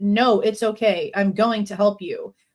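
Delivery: put-on eerie tone. Retelling a man's words heard that night: imitating an eerie voice. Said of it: "this eerie voice".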